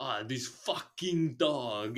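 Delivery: loud, odd, very slow, very drawn-out delivery. Complaining about a movie villain, imitating the villain's odd delivery. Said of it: "he says it like that".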